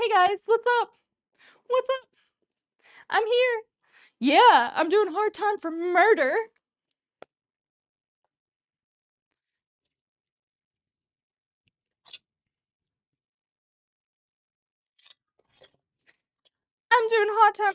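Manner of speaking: high put-on shark voice. Imagining a shark arriving at prison: shark arriving at prison. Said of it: "a shark showing up to prison, just like".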